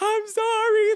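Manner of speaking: high, wailing, sobbing scream-crying. Retelling a screaming argument, imitating scream-crying. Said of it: "like scream crying".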